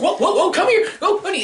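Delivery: mock panicked yelping.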